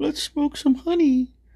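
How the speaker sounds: deliberately bad character voice pitched very high. Describing a drawing where the character says a line: bad Winnie the Pooh impression. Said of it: "bad, bad Winnie the Pooh".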